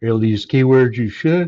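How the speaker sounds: loud talk stretched by a yawn. Teaching about SEO, talking through a yawn. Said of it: "Sorry for the yawning".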